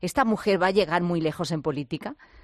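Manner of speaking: ordinary talk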